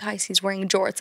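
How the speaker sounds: hushed stage half-whisper. Retelling what a friend said to the group about jorts: imitating a friend half-whispering. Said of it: "my friend comes and whispers to all of us".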